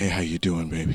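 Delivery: sensual, seductive sweet-talk voice. Retelling a cartoon scene where Tom gets a call: Tom's sensual voice. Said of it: "the sensual ass voice that he has".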